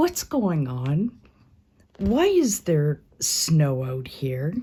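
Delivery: acted puzzled, unimpressed tone with swooping intonation. Retelling how Tina looked up at the door, voicing Tina not impressed. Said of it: "She was not impressed".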